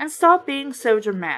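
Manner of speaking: plain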